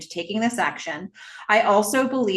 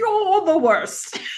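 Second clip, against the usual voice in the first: put-on, very high elderly British lady voice; 12 semitones higher, 3 dB louder than usual. Asked to give a few more options, the speaker tries an old British lady voice. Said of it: "old British lady".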